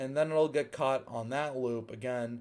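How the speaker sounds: ordinary delivery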